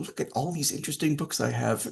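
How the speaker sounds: taunting, mocking delivery. Retelling how a woman acted mean toward Jamae, imitating her mocking tone. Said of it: "she just kind of like mockingly like".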